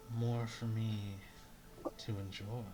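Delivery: whispering in a character voice. Voicing Argos, who whispers into the player's ear: whispering in character. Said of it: "whispers into your ear".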